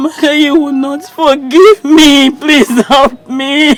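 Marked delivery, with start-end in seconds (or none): 2.3-3.7 tearful, crying voice. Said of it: "Crying will not solve anything".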